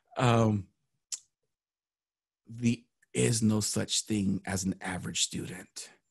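hushed whisper. A speaker drawing the audience closer to share something: whispering. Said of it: "I'm going to whisper it".

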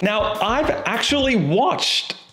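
high voice, cracking and breaking. Describing a hillside, the speaker notices their own voice breaking. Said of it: "I think my voice is breaking".

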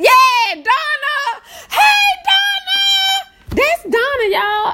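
very high-pitched voice, bubbling over with excitement. The speaker greets Donna while way too excited, in an excited high-pitched voice. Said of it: "excuse the high-pitchedness of my voice".

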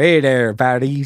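put-on American cowboy voice and accent. Describing a man who shows up in Paris in his hat, speaker does an American cowboy voice. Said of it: "American cowboy".

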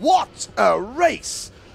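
slow, loud, high-pitched exclamation.

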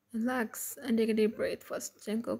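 usual speaking voice

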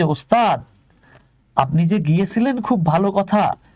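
usual speaking voice

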